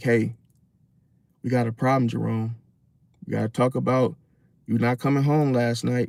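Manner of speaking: even, flat, calm, emotionless quiet indoor voice. Showing how to talk to someone who can't handle emotion: calm indoor voice, no emotion. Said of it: "using your indoor voice with no emotion".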